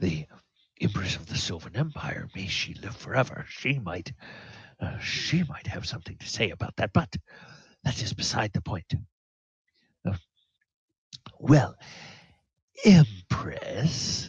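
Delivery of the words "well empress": sneering, mocking voice, higher and louder. Voicing a character who addresses the player as empress: mocking tone. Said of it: "he puts, like, a real mocking tone into that".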